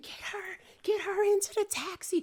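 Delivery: mock screaming. Retelling the taxi ride to the birth center, retelling a man screaming. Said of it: "So he's screaming".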